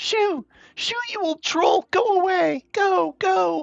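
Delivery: frightened, panicked, very high, drawn-out cry. Voicing a child shouting at a troll: high panicked voice. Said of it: "high, panicked voice call out from nearby".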